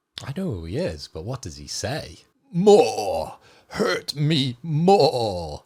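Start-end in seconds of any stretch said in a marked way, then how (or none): 2.6-5.5 very slow cyborg ninja voice, every word stretched. Asked to hear his Grey Fox impression, the speaker does a Grey Fox impression. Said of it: "your impression of Grey Fox, the cyborg ninja".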